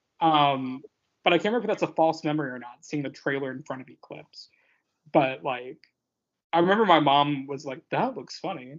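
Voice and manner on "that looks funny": showy carnival-barker style call. Retelling what mom said about a trailer, imitating mom's voice. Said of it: "Specifically in that voice".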